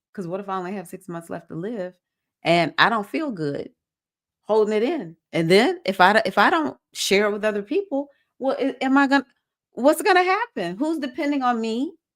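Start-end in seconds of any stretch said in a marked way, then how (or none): none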